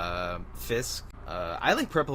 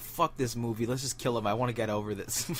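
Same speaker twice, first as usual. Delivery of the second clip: normal talking voice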